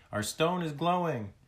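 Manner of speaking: high-pitched yelling. Narrator voicing Skyla as the friends peer into the opened sack, yelling. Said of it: "Skyla yelled".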